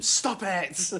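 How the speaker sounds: put-on short, high-pitched yelled shout. Joking about a rough team's player: imitating Souness shouting. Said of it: "Souness shouting at him".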